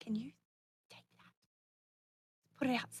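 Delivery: barely voiced, very quiet, hushed whisper. Asking a companion to take a cigarette outside: whispering in character. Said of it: "whisper to Victor".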